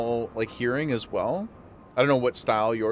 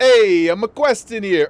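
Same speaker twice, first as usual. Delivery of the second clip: pushy, loud, aggressive put-on New Jersey accent; 8 semitones higher, 11 dB louder than usual. Comparing character accents, the speaker demonstrates an aggressive new jersey accent. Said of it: "It's a little bit more aggressive. The Jersey".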